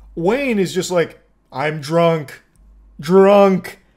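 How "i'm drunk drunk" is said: loud, thick-headed, one-word caveman speech. Acting out what Wayne, a drunk driver, said: imitating Wayne as a caveman. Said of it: "Speaking like a caveman with like one word".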